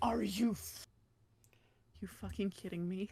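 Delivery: close-mic whisper. Joking that he is doing asmr into his mic, whispering into the mic. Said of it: "I am A S M R whispering into my mic".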